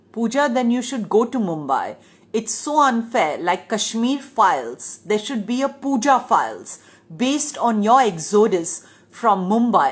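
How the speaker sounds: usual speaking voice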